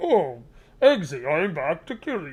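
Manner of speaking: machine-like voice, very slow, each word drawn out. Joking about a villain's mechanical voice, doing a Bane voice. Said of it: "mechanical voice sound like Bane".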